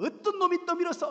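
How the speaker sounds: loud, high, indignant, angry yell.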